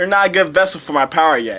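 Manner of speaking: ordinary delivery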